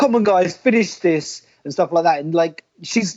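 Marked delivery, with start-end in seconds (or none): 0.0-1.4 play-acted high, drawn-out, urgent shout. Retelling how the referee shouted at them to finish: imitating Audrey shouting. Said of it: "hear Audrey shouting at them, going".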